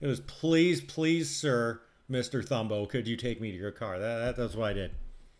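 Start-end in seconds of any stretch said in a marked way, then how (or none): 0.2-4.0 play-acted, heavy, full begging, pleading hard. Retelling own words to Mister Thumbo: imitating own heavy begging. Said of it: "even more begging".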